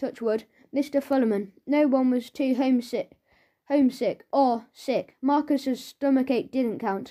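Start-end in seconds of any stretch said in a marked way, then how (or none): none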